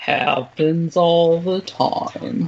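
put-on gloomy cartoon voice. After saying someone spoke in her Eeyore, doing the Eeyore voice. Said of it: "in her Eeyore".

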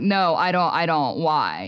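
put-on huffy, put-upon, put-out annoyed tone. Retelling a TikTok where a wife answers her husband's joke, imitating a put-out wife. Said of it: "all put out".

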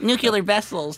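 odd, high, weird little mouse-like put-on voice. Acting out someone alone in the dark watching a VHS tape: weird mousy voice. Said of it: "you change your voice to some weird mousy".

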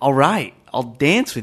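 mock utterly sure-of-himself, super confident delivery. Showing how he goes up to a girl and offers to dance, very confident voice. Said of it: "in the most confident voice".

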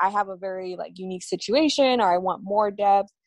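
plain

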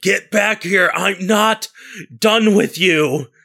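shrieking, very high, furious screaming yell. Voicing a character screaming after an escaping skeleton: screaming angrily after someone. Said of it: "screaming after it".

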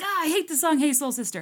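mock annoyed outburst, high and loud.

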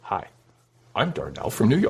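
mocking quiet, gentle voice. Imitating a quiet caller introducing himself: imitating a soft soothing voice. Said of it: "You have a very soothing voice".

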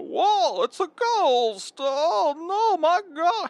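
mock, very high, loud, goofy, panicked scream. Describing Bibsy, who thinks he's seen a ghost, the speaker imitates Bibsy screaming. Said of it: "he'll carry on screaming about".

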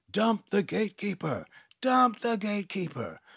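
insistent, high-pitched, repeated shouting. In a story, Lina calls out as the gatekeeper starts gagging, yelling. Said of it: "Lina was yelling".

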